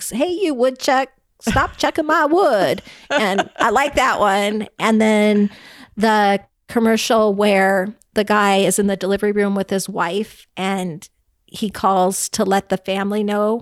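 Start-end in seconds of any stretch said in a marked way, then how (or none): 0.1-2.8 loud, hollering put-on farmer voice. Speaker describing a favorite commercial, imitating a farmer yelling at woodchucks. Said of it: "the farmer's yelling at the woodchucks".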